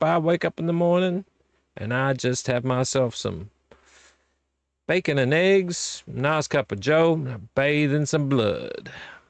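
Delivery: put-on Southern drawl on every line. Speaker tells a story about a legend in a put-on southern accent. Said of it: "Don't know why I'm doing a southern accent".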